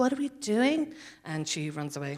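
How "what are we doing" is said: put-on earnest, completely sincere girlish voice. Retelling a scene from a show, imitating the character Aisling. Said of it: "my perfect impersonation of her".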